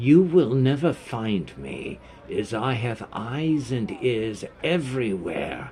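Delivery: eerie, otherworldly, possessed-sounding voice. A narrator voices a gnome speaking not as himself, as if possessed. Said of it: "in a tone as if possessed".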